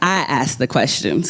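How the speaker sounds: plain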